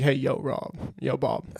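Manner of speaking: imitated grandfather voice. Joking about how the other speaker's grandpa might talk: imitating the other speaker's grandpa. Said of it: "He's like".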